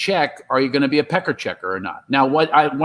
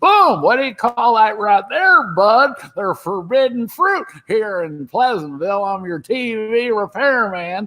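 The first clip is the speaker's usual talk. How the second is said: put-on old man voice, pitched up high; 7 semitones higher than usual. Retelling dubbing a sick actor in a film: imitating Don Knotts as an old man. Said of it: "I had to imitate him as an old guy".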